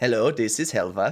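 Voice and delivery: robotic voice with toned-down Swedish accent. Playing Helva after the Swedish is turned down, Helva with milder Swedish accent. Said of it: "turn Swedish module down twenty-five percent".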